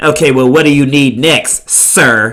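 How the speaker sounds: mock, very condescending, snide and superior tone. Retelling how Elizabeth answered him, mimicking Elizabeth's condescending tone. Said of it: "in a very condescending tone".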